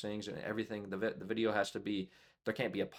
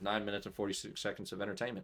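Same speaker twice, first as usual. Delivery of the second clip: ordinary talk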